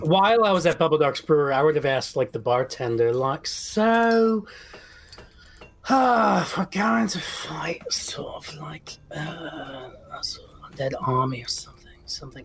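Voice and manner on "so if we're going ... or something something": quiet mumbling, muttered under the breath. Voicing a character asking a bartender something, muttering under his breath. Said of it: "that's under his breath".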